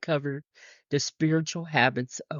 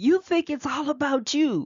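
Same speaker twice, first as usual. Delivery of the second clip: intensified, very high-pitched, loud outburst; 12 semitones higher than usual. Retelling what they said to her at the end of an argument, in an intensified loud voice. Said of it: "kind of in a intensified, loud voice".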